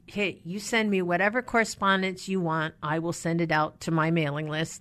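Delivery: ordinary delivery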